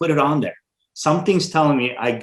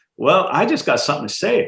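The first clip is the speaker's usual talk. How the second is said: put-on, leaned-into South Carolina accent; 4 semitones higher than usual. Speaker retells a new board member speaking up at the first meeting; South Carolina accent. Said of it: "in this kind of South Carolina accent".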